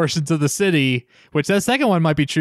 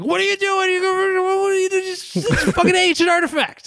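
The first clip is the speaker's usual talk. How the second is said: put-on very high, furious, scolding old-man voice. Retelling a movie scene, imitating an old man scolding Ash. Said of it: "perfect impression".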